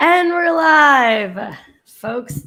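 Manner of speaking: raspy, drawn-out voice. Opening a live stream for the audience, in a raspy voice. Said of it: "my voice is all raspy as I say that".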